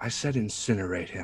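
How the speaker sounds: hushed whisper, spoken very close. Casting guidance on a companion and whispering in his ear: whispering in character. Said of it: "I'm gonna whisper in his ear".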